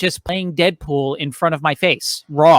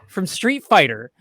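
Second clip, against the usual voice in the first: ordinary delivery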